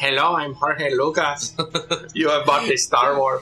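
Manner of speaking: low, put-on Indian accent. In a joke about Disney and Star Wars, one speaker plays Jorge Lucas, Indian accent. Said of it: "Why did you sound Indian just now?".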